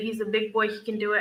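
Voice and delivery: plain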